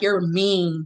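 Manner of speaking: put-on, firm, no-nonsense stern child voice. Retelling what a young daughter said to her: imitating a stern child. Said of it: "she was so stern in her tone".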